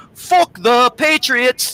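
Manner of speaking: heavy put-on Irish accent, pitched high. Retelling what a man from Ireland first said: imitating a thick Irish accent. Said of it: "times two on the freaking accent".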